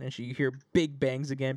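plain

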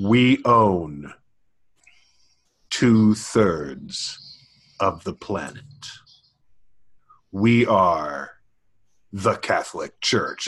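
deep, ominous, menacing villain announcer voice. Recreating an old '80s spot showing a revolving globe, in a put-on deep, ominous voice. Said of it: "this deep, ominous voice going".

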